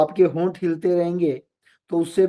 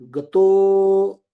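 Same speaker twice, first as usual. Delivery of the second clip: extra force on तो of गतो; 3 semitones higher, 5 dB louder than usual. Explaining avagraha, stressing the syllable before it: stress on final तो. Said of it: "तो ऐसे जोर देना पड़ेगा, बल का प्रयोग करना पड़ेगा उस अक्षर पे".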